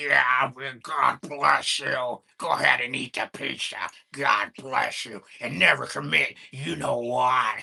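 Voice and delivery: loud, demonic horror-film voice. Mocking the other speaker's blessing: imitating a talking demon voice.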